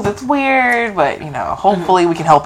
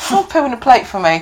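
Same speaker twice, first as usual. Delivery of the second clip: put-on Australian accent, pitched up; 5 semitones higher than usual. Retelling what an Australian client asked, in an Australian accent. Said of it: "he has the accent".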